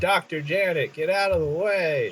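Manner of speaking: in-character call-out, pitched high. Warning a character across a chasm in a game: yelling really loud. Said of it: "I'm gonna yell really loud".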